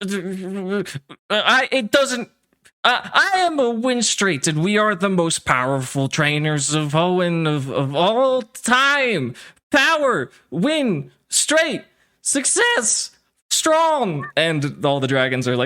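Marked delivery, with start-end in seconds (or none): 0.0-14.3 put-on drunk voice, much higher, slower. Voicing Vince in a tabletop game after an intimidation roll, drunk, heavy-breathing. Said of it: "a drunk, heavy breathing, shirtless young man".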